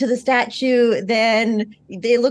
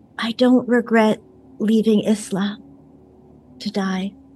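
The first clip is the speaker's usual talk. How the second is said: whispering very quietly. Voicing a character confessing a secret to a statue: whispering very quietly. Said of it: "lean in really close and whisper very quietly".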